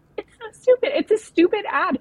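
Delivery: high, loud, exasperated outburst.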